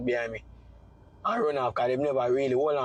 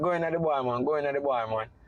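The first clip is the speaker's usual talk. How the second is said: usual speaking voice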